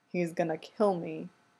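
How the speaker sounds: quiet, mumbled mutter under the breath. Mid-kiss with his boyfriend, muttering. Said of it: "Derek mutters".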